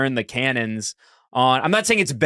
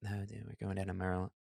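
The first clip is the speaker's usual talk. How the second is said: very quiet, low, hushed put-on Maryland accent; 6 semitones lower, 20 dB quieter than usual. Asked how to say maryland in the accent, showing it: maryland accent. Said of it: "let me get into it".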